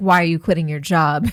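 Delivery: critical, disapproving, judgmental, pointed tone. Demonstrating the second way a question was phrased, judgmental tone. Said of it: "judgmental comes in all different".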